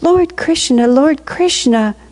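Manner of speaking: high, crying out loudly. Reading a story, the gopis hurry to a cottage, crying out. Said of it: "crying out".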